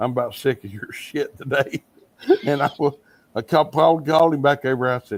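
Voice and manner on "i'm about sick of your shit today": mimicked mumble under breath, much quieter. Speaker recalls a man muttering while being told how to do something, retelling a mumble under breath. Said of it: "mumble under his breath".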